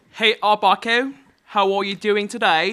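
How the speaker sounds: crappy put-on British accent. Greeting a fellow player at the start of a game, crappy British accent. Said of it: "using crappy British accents".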